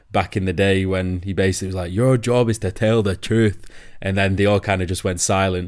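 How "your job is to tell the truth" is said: put-on poor, weak, unconvincing Scottish accent. Retelling Alex Ferguson's warning from a viral video, in a poor Scottish accent as Alex Ferguson. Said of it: "That was a poor Scottish accent".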